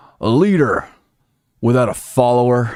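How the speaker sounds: booming put-on voice, slow and drawn out. Asked to do the best impression close to the microphone: John Boehner impression. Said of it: "do the best... Boehner that you can".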